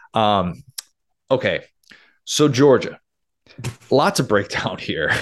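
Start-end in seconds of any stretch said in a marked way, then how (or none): 2.3-5.2 disappointed, let-down fatherly parental tone. Moving on to the next team: disappointed father tone. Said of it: "You said that like a disappointed father".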